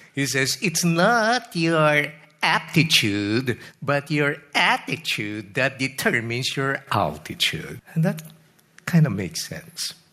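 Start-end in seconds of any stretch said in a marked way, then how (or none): 0.6-7.8 slow southern twang, laid on heavily. Quoting Zig Ziglar's famous line, the speaker does a Zig Ziglar southern twang impression. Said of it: "his southern twang imitation".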